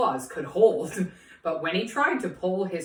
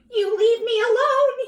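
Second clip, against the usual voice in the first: very high, squeaky, frightened goblin voice; 5 dB louder than usual. Narrator reading the frightened little goblin's reply to Herschel; squeaking frightened goblin voice. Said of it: "he squeaked".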